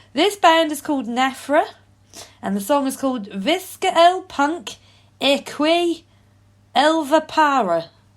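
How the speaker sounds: speaking with Norfolk accent. Introducing the next band after being asked to: put-on Norfolk accent. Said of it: "this Norfolk accent's gonna get away".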